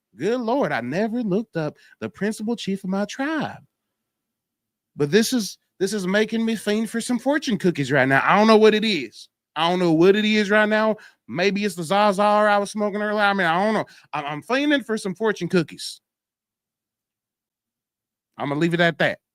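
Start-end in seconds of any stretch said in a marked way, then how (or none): 5.0-19.2 bad, terrible, fake put-on country accent. Telling the guys about craving fortune cookies, in a terrible country accent. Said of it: "I'm done with the terrible country accent".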